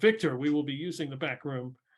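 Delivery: ordinary delivery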